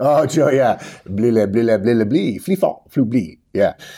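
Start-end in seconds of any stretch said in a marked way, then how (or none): 1.1-3.4 fake French gibberish babble of nonsense syllables. Prompted to use Joey French, the speaker babbles: mock French gibberish. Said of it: "use your Joey French".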